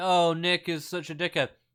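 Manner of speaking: mock laughing, amused and scornful. Mocking listeners who laugh at someone: mocking amused voice. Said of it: "You're all laughing like".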